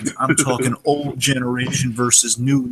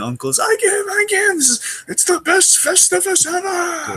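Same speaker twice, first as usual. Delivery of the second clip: put-on crying voice, higher pitch. Retelling a scene where George loses a fight: imitating George crying. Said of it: "he's instantly crying".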